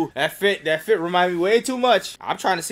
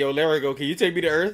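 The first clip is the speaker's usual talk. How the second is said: usual speaking voice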